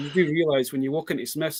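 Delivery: normal talking voice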